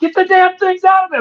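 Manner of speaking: mock very high shrieking, screaming yell. Retelling a reaction to a video on a screen: retelling screaming at the screen. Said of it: "I'm screaming at the screen".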